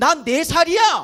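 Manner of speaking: put-on loud, strong, forceful, insistent child's voice. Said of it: "아주 강한 목소리로 이렇게 얘기하죠".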